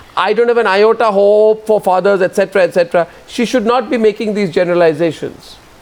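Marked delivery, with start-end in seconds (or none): none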